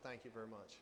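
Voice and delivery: very quiet, sarcastic, under the breath. Thanking someone right after saying it was missed: sarcastic.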